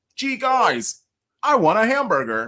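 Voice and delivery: fake exaggerated American accent, very high and swooping. Demonstrating how the listeners would clap back, in a put-on american accent. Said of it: "clap back with your American accents".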